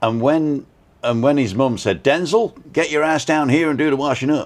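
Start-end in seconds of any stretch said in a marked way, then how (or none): 2.0-4.5 poor, put-on American accent, high pitched. Quoting a mum calling her son Denzel: bad American accent. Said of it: "that's a worse American accent than the Irish accent I did".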